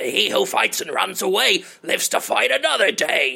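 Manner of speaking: weird, high cartoon voice with wildly swinging pitch. Recalling a cartoon villain's catchphrase, the speaker does a weird King Koopa voice. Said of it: "He had a weird voice like that".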